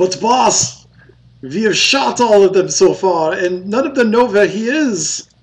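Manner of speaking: loud, high-pitched, put-on German accent. Voicing a soldier reporting to the boss: German accent. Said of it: "I just like doing the German accent".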